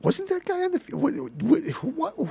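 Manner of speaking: very high, confused, baffled chatter.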